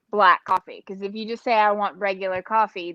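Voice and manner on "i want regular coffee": ordinary delivery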